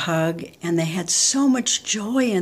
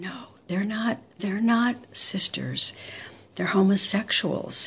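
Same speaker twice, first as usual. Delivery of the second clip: quiet, hushed, almost embarrassed whisper; 3 semitones higher than usual. Retelling how mom answered a question about two women: imitating mother's whisper. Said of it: "she got really quiet and she whispered".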